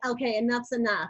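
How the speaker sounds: ordinary delivery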